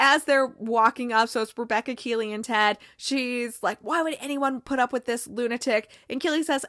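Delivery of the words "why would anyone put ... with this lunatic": usual speaking voice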